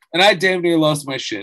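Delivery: ordinary delivery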